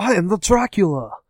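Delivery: bad, clumsy, put-on British accent. Discussing the 1992 Dracula film, mocking Keanu Reeves's terrible British accent. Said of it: "with his terrible British accent".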